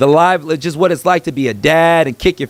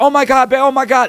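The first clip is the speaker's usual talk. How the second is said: put-on, frantic, high, panicky frightened outburst; 8 semitones higher than usual. Retelling how the wife reacted after a roach landed on her: imitating a frantic scared scream. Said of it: "it was like a frantic scare kinda thing".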